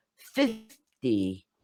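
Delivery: first syllable fif of fifty stressed. Pronunciation lesson on tens versus teens: stress on fif in fifty. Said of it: "we're going to stress the first syllable".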